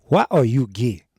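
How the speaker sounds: put-on loud, deep Nigerian accent. Retelling an interviewer's first question, in a put-on Nigerian accent. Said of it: "bring out my Nigerian accent".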